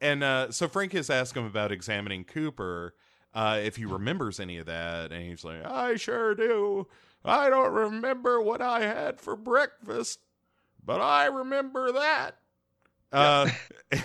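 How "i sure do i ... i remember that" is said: very high, slow, put-on elderly old man voice. Retelling a man's answer when asked what he remembers, in an old man voice. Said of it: "I like doing old man voice".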